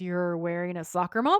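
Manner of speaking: normal talking voice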